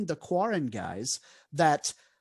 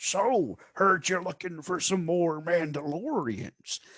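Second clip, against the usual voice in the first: put-on stock Western country accent. Recapping a bar scene, voicing the Quarren guy, stock country accent. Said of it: "the most stock country accent character".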